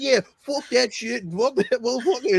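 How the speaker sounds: put-on heavy Boston accent at a very high pitch. Talking about Deadpool and Wolverine, imitating Chris Evans's Boston accent. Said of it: "fucking Boston accent was fucking high flying".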